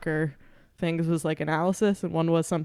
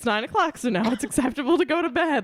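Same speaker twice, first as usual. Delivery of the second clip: put-on pitched-up old-person Midwestern accent; 8 semitones higher than usual. Retelling what Miranda said on the couch at nine o'clock, imitating Miranda's old Midwesterner voice. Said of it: "like an old person from the Midwest".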